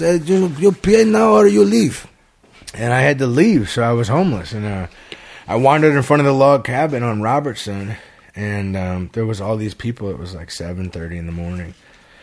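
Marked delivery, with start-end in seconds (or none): 0.0-2.1 put-on Russian accent, very high and loud. Quoting the landlord's demand to pay or leave, in a Russian accent. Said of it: "Is that a Russian accent?".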